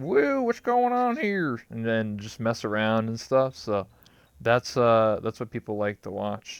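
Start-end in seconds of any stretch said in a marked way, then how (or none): 0.0-1.6 high put-on hillbilly voice. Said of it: "this, like, hillbilly voice".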